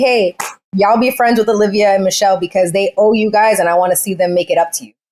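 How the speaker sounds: ordinary delivery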